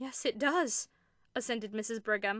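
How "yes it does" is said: horrified, much slower. Narrator voicing Mrs. Brigham agreeing with her sister, horror-stricken. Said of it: "whose horror-stricken tone matched her sister's".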